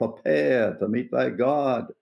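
strong Southern voice, slow, every word drawn long. Describing a preacher's voice and quoting his line: Billy Graham voice. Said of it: "he has that Southern voice, the drawing out".

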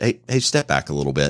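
very low, calm, low-key voice. Showing how a warning to step back sounds: really low tone of voice. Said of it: "said it in a really low tone of voice".

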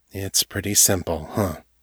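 quietly, softly. A narrator reads John answering the woman he holds close, said quietly. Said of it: "He said quietly".

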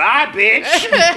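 loud, brash, full street-style voice. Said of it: "somewhere Kate Middleton is like".

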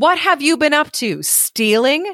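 shrill, furious screeching of rage. Narrator reading a story voices the stepmother confronting the girl, screeching with rage. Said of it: "She screeched with rage".

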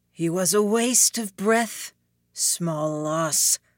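rough, gravelly demonic voice. Narrator voicing the devil's line in a story; gravelly devil voice. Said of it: "the devil spoke his voice gravelly".

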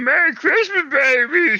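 very high, badly done character voice. Joining the group's greetings, a speaker does a bad Yoda impression. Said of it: "Sounds like a really bad impression of Yoda".

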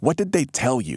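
pressing, urgent voice. Morley comes in close and questions the young man, urgent. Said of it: "he said urgently".

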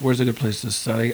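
usual speaking voice

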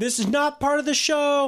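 imitated terrified cry. Retelling a horror movie scene, the girl begging: imitating a terrified plea. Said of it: "out of her mind with terror".

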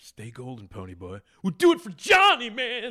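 very high-pitched and loud. Quoting a line from The Outsiders: Matt Dillon impression. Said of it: "it's my Matt Dillon".

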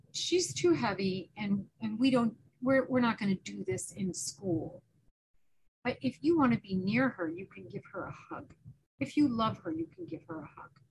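calm, quiet voice. Recounting what they said about a situation at school, retelling a calm, quiet remark. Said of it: "I just very calmly and quietly said".

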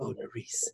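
very hushed, soft, breathy romantic voice. Imitating how a man greets Nerys again, mock breathy romantic voice. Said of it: "he kind of used that weird breathy tone".

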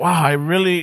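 put-on dumbfounded, stunned voice. Retelling how a young cop reacted to the car: imitating a dumbfounded cop. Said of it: "he was just dumbfounded".

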